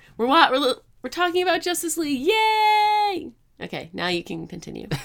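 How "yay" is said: very high, loud, stretched-out excited cheer. Redoing the opening cheer to sound excited: excited yay. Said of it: "I'm excited to talk about it".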